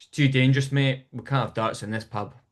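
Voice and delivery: put-on, completely deadpan, bone-dry, no-nonsense, matter-of-fact delivery. Retelling a mate's reply to a question in a pub, imitating deadpan delivery. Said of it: "he just completely deadpan went".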